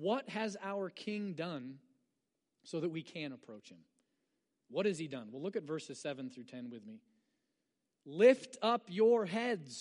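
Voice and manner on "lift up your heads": loud, raised reading with extra force. Reading a verse aloud for its exclamation point: read louder. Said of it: "I'm reading it louder because do you note the exclamation point?".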